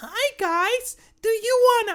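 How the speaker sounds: very high, very loud, shrill, drawn-out squeal. Retelling a voice heard out of nowhere during class presentations, really high-pitched. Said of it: "we hear a really high pitched voice going".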